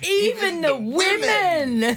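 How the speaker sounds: "even" stressed, dragged out, slow and high. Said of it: "It was the emphasis you put on".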